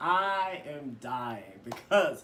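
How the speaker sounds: ordinary talk, nothing marked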